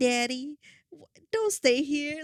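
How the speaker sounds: put-on strong, full Southern accent, no holding back. Recounting how one of them talked: strong Southern accent. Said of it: "one of them was like straight up Southern".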